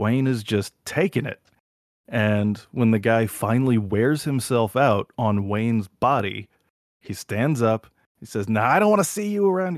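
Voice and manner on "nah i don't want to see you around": put-on Boston accent, very high and fast. Retelling what a guy said after hitting Wayne, in a Boston-ish accent. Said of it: "like something Boston like that".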